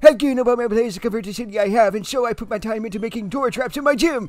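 put-on fast-talking old man voice. Voicing an electrified character after agreeing on his voice: speedy fast old man voice. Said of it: "Old man, speedy, fast voice".

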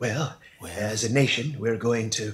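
low, soft, husky voice, easing in gently. Showing the hook of an impression: President Reagan impression. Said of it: "When Rich Little used to do President Reagan".

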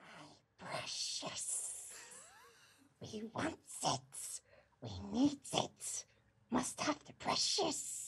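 breathy, whispered stage whisper character voice. Asked to do the voice for a listener, the speaker performs it: Gollum voice. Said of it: "Could I just quickly do that voice for you".

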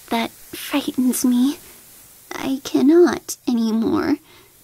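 murmured, abashed, sheepish, embarrassed. The little prince answers the king who orders him to yawn: murmured, abashed. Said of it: "murmured the little prince, now completely abashed".

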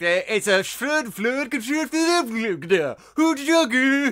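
high-pitched, fake Swedish-sounding nonsense babble. Joking with friends about film casting, doing a Swedish Chef voice. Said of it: "I'm doing the Swedish Chef now".

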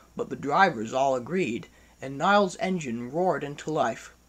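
plain reading voice

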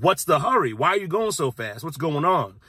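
plain

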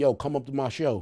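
ordinary delivery

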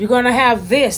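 plain

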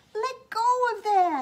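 shrill, very loud, high-pitched shouting yell. Arthur calls to Rory and Pale fighting over Mom's present, shouted. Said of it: "shouted Arthur".

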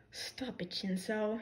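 soft, low muttering under the breath. The smaller teen answers Hitoshi's remark, muttered. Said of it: "he muttered".

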